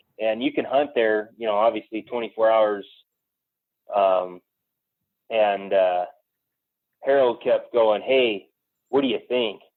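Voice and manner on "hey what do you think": whispered. Retelling a hunt where Harold kept whispering questions: imitating Harold whispering. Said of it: "he kept kinda whispering to me".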